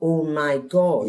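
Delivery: ordinary talk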